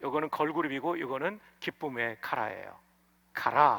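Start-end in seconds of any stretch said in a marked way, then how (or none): 3.3-3.8 카라 accented on the final syllable 라. Distinguishing 카라 meaning joy from the girl group: stress on second syllable of 카라. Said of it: "액센트가 뒤에 있죠".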